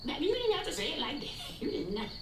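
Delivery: playful, high, soft, teasing mock scolding.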